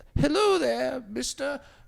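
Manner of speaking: very high, rough, creaky homeless-man character voice. Role-playing a scenario with the other speaker: homeless person character. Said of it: "so I'm going to be a homeless person".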